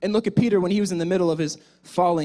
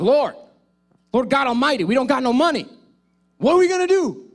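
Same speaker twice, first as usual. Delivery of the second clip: mock frantic, high, loud rising panic; 6 semitones higher, 5 dB louder than usual. Retelling Peter panicking about having no money at the gate: imitating Peter freaking out. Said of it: "Peter was freaking out".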